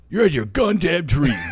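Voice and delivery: rough, high, first-attempt put-on voice. Trying to be the listener, the speaker attempts imitating the listener's voice. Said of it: "Let me see if I can get the voice".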